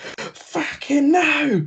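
mock, high-pitched shrieking scream of pain. Retelling answering a friend on the ice rink after hurting a wrist, retelling a scream of pain. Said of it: "I'm screaming in pain still".

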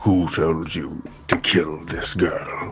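fierce, intense, pressing, demanding. A player grabs a man by his clothes in a flooding boat, intense. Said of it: "as intense as I can".

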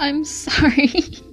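put-on giggling speech. Retelling laughing while dad complained of pain, acting out giggling. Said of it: "And I'm just like giggling".

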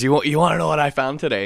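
hyped-up, jacked-up, bursting, freaking-out eagerness. Retelling a man at dinner, all jacked up: imitating hyped-up excitement. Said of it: "he's all jacked up, like just freaking out".

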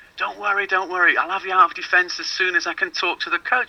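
put-on, very high-pitched shouting. Retelling what a trialist's dad shouted during a tournament: imitating a dad shouting. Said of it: "he kept shouting".

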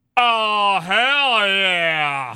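mouth held wide open, loud and high. Trying the line after being told to: saying it with mouth open. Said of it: "Let's see it again".

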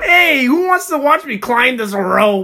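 very high-pitched animated cartoon gym coach voice. Hearing a man described as sounding like him, jumping in with a Coach Steve voice. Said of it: "he kind of sounds like a Coach Steve from Big Mouth".

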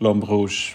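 French pronunciation. Correcting how the name is pronounced: French pronunciation. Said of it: "it's a French name".

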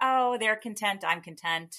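ordinary delivery

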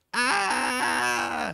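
mock scream, sudden high-pitched shriek. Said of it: "closes her ears and starts screaming".

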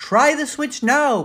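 loud, very high yelling shout. Down in a dark basement, calling to a friend at the light switch, yelling. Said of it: "Paul yelled".

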